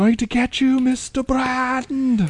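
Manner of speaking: screaming, very high-pitched. Retelling a scene where Christopher Lloyd is mugging: imitating Christopher Lloyd screaming. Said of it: "he is mugging and screaming".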